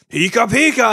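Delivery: loud cry, called out. Retelling hearing the real voice behind the character: Pikachu's Pika Pika voice. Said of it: "he's like saying it like that and everything, and that's how his Pika sound".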